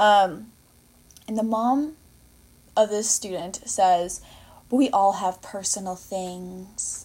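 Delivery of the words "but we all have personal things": put-on patronizing, superior, talking-down tone. Retelling what a student's mom said: imitating a condescending tone. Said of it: "She said it like that. So condes-, so condescending".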